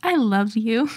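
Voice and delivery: mock sweet, loving, affectionate tone. Retelling gently telling a partner they keep leaving the Breville on: retelling a sweet loving tone. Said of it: "said it was the nicest way that I've ever said it".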